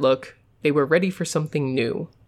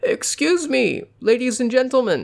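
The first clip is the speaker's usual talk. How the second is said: put-on high, quavering, warbling old man's voice; 8 semitones higher than usual. An old man addresses the people in the lobby, in a warbling old man's voice. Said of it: "in his warbling old man's voice".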